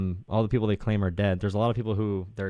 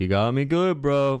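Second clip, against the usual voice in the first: slow, high cartoonish voice; 5 semitones higher, 4 dB louder than usual. Mimicking the other speaker's last reply: mocking Patrick Star voice. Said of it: "going back to the Patrick Star voice".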